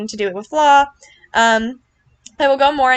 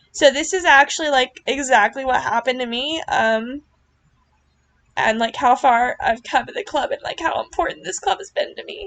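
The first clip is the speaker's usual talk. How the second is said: emotional voice welling up, close to tears; 3 semitones higher than usual. Reflecting on how far they've come in the club, getting emotional. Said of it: "but now I'm getting emotional".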